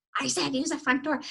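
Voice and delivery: ordinary delivery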